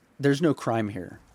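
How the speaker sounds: put-on firm, steady delivery. Retelling what an officer said: imitating a firm statement. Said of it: "he said it pretty firm".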